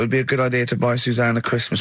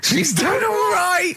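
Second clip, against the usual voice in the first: put-on very high-pitched sixty-year-old man voice. Co-host answers a question about a holiday gift; talking like a sixty-year-old. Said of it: "Why do you talk like you're sixty years old?".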